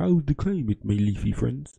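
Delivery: bad, unconvincing British accent. Joking about Prince Charles talking to plants: bad British accent as Prince Charles. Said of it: "that was not a British accent".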